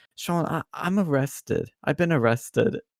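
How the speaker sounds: high, tearful, broken crying voice, acted. Sean retells her phone call to him; imitating someone crying. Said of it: "And she's crying".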